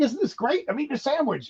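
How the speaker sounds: very high, delighted, thrilled exclamation pitched way up.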